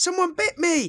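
very high, shrill, loud shout. Retelling shouting to embarrass someone after walking away, acting out the shout. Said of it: "I just shouted".

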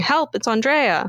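imitated girl screaming, urgent. Retelling a daughter running to her parents: imitating a girl screaming for help.

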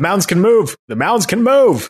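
very high, shrill, loud shouting. A player's character yells back to companions fifty feet away, yelling back a warning. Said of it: "I yelled back".

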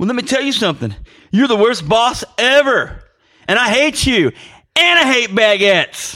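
loud, high, play-acted cocky, self-assured tone. Recalling a woman standing up to tell off her boss, imitating a cocky woman. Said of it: "Then she turns into cocky Catwoman".

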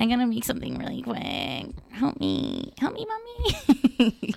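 put-on acting like a young teen. Retelling a junior-high reaction to everyone dressing up: imitating regressed junior-high self. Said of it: "regressed, like, junior high feeling".

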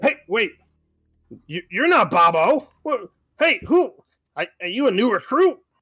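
kobold warrior character voice. Voicing two kobold warriors confronting a stranger: kobold warrior voice. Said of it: "two Kobold warriors".

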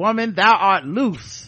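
loud, slow, proclaiming put-on celebrity voice. Reading a listener review aloud, quoting a line in a T.D. Jakes voice. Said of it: "telling me in a T D Jakes voice".

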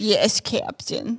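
cartoonish pirate character voice. Explaining to the others who Mr. Smee is: Mr. Smee impression. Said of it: "That's what he used to say in the movie".

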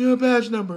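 high, loud, tearful and insistent pleading voice.

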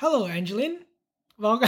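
artificial, put-on, fake-sounding tone. Asked to try talking with more words, fake-sounding greeting. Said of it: "I don't know why that sounded so fake".

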